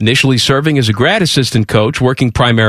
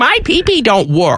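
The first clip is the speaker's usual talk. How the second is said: put-on cartoon baby-talk voice, much higher; 9 semitones higher than usual. In a men's clinic ad, doing the rest as Elmer Fudd baby talk. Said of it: "Another symptom of ED is baby talk".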